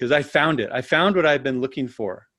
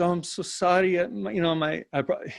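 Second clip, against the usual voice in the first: put-on Italian or Indian-sounding accent, broken English, higher, quieter; 5 semitones higher, 4 dB quieter than usual. Retelling what a woman said backstage in broken English, Italian accent. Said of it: "the only accent I can do is Indian".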